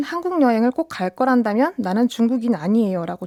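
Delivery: plain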